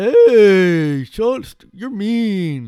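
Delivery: high, loud, hurt dopey dumb guy voice.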